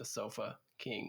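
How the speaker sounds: very slow, deliberate, word-by-word drawn-out delivery. Explaining a store-name joke to the other speaker, said really slowly. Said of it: "You have to say it really slow".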